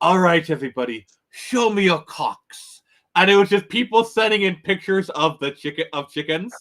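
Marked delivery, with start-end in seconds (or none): 0.0-2.8 put-on Australian accent. Retelling a TikToker's catchphrase in a Steve Irwin Australian accent. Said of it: "this, like, Steve Irwin Australian accent".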